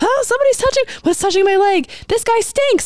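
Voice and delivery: very high, freaking-out, panicked voice. Acting out a woman's inner thoughts on a packed, stalled subway, imitating someone panicking. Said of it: "how she's panicking and she's freaking out".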